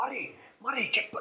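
acted-out shout. Retelling a match story, re-enacting shouting at a player in injury time. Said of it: "I'm shouting on".

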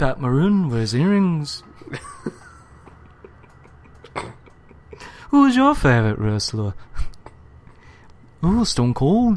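put-on Liverpool accent. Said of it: "It's actually [name] playing hockey in Liverpool".

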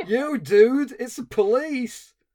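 put-on loud, drawn-out Californian accent. Showing how an accent almost goes full Bill and Ted, in a Bill and Ted Californian accent. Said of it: "the Californian American accent".

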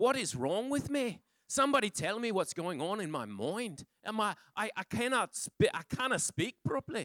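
put-on Irish accent with all the inflections. Imitating someone who woke up speaking in an Irish accent. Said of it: "she just started speaking like this".

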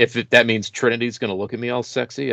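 ordinary talk, nothing marked

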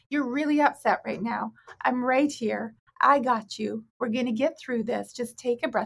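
steady, calm, reassuring counsellor tone. Showing how to stay low while the other person goes high: therapist voice. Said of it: "in your therapist voice".

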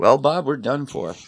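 composed intercom captain tone. Imagining pilots' last words before a crash; pilot voice. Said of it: "they're still in their pilot voice".

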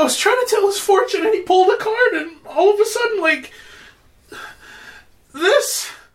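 very high, terrified hysterical panic. A storyteller voices a terrified woman asked what happened, hysterical. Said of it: "She's hysterical right now".

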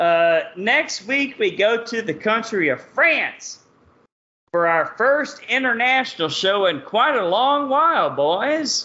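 put-on heavy Texas accent. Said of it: "my Texas accent".

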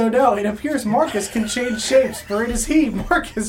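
high, loud, pompous, grand proclaiming.

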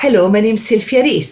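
put-on Welsh accent, plain delivery. Showing how a named character helps get into an accent: Welsh accent as Sylvia Rees. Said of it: "if I want to do a Welsh accent, I'll go".

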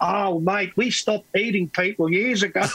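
put-on slight hint of Australian accent. Retelling what a man said, in a slight australian accent. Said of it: "He talks in a kind of a little bit of an Australian accent and says".

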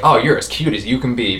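put-on, mock-condescending tone. Describing an actress's performance, imitating her condescending line delivery. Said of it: "deliver lines so condescending".

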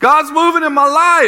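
mock very high, shrill call-out yell. Acting out a youth calling from one end of the line: imitating Walker yelling. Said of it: "if Walker yells out".

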